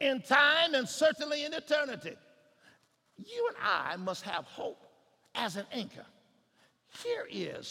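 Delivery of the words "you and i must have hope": ordinary talk, nothing marked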